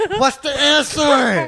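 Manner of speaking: shrill, very high, very loud yelling. Retelling a parent's homework questions: imitating a yell. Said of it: "He'd be yelling at me like".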